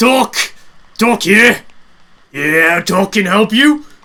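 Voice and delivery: loud resonant voice. A game master voicing Doc answering a player at the tent, booming voice. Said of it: "you hear a rather booming voice uh, reply to you".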